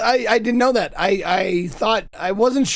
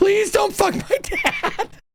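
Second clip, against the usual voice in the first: put-on scream, higher; 13 semitones higher than usual. Retelling pleading with a girl walking to her car: imitating own past screaming. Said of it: "Screaming at her in a parking lot".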